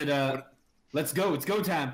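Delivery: shouting. In a game session, speaking in character to the group: shouting loud. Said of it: "be shouting loud".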